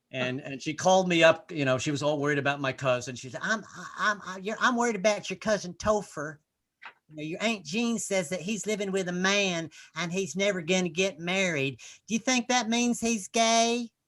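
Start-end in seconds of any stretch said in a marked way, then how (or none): 3.4-13.9 put-on Southern-accented voice. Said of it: "cute little Southern Baptist voice".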